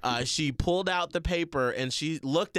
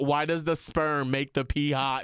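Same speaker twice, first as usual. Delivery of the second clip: usual speaking voice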